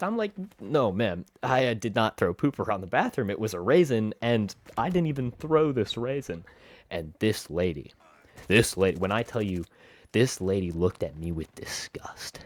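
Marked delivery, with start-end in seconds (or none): none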